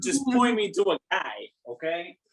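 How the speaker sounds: loud, swooping put-on Brooklyn accent. Imitating another player's character line: Brooklyn accent. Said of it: "turn into a Brooklyn accent".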